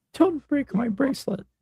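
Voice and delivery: very high, fake whimpering, crying pity voice. Acting out an arrested person's words from a video, imitating a pity cry. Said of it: "That's a pity cry".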